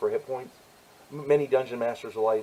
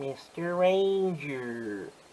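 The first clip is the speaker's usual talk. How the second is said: cartoon sidekick voice, stretching out "ranger"; 4 semitones higher, 3 dB quieter than usual. Greeting a Ranger player as Mister Ranger: Boo Boo impersonation. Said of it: "That's my best Boo Boo impersonation".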